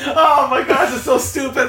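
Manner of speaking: very high, giggling, laughing exclamation. Responding to Dave's remark, unable to stop laughing. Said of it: "I can't stop laughing".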